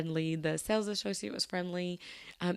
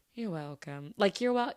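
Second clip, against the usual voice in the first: mock-condescending, snooty tone. Retelling a snooty man's reply after being thanked, imitating a condescending tone. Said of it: "sounded so condescending".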